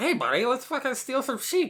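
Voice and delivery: very high, duck-like cartoon voice. Acting out a character's invitation, the speaker does a Daffy Duck voice. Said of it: "Is that a Daffy Duck impression?".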